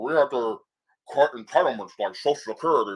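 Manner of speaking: mumbling, put-on politician voice. Doing a best impression of Mitch McConnell: Mitch McConnell impression. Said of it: "I'm doing my best impression of Mitch McConnell. He sounds like he has shit in his mouth".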